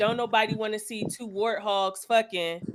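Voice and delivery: ordinary talk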